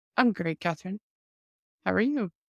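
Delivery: synthetic, assistant-style voice sounding like an AI. Trading greetings with her co-host at the show's opening: sounding like an AI. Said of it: "You sound like an A I".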